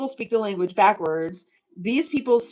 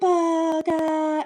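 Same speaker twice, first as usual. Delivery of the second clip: high-pitched woman's voice with Japanese accent; 7 semitones higher than usual. Quizzing listeners on a Japanese word, saying it like a Japanese woman would. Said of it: "I'll say it like a Japanese woman would".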